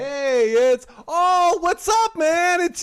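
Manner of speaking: put-on surprise in a very high voice. Speaker retells a moment when they acted surprised: retelling acted surprise. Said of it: "I acted surprised".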